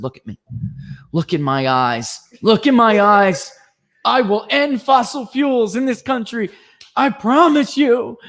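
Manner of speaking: very high, rising, intense, solemn delivery. Retelling how a politician vowed to a girl on the campaign trail: mock-intense vengeful vow. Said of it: "He was saying it like that".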